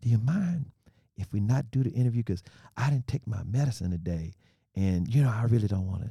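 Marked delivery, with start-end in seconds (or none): 0.0-4.3 whispered words. Retelling how an interviewee asked to skip the interview; retelling a whisper. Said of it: "He's whispering".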